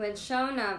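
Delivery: plain reading voice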